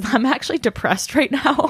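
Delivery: chuckling and laughing through the words. Admitting to being depressed right now, laughing while talking. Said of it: "So I'm chuckling, chuckling through the pain".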